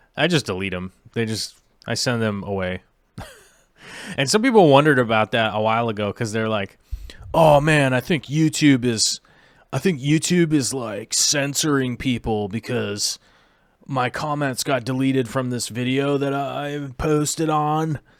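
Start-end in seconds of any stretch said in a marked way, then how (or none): 7.3-17.9 put-on laid-back, slow, weird surfer-dude drawl. Quoting commenters who thought their comments were deleted, in a weird surfer voice. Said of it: "I'm saying it in that weird surfer voice".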